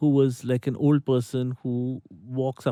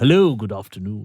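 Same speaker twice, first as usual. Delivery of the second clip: deep, loud, very posh put-on accent; 4 semitones lower, 6 dB louder than usual. Retelling a stranger's greeting, imitating his very posh accent. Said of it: "a very posh accent".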